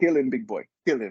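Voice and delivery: bad put-on Brazilian accent. Speaker retells his coach's words before a roll, bad Brazilian accent. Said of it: "my Brazil my Brazilian accent needs work".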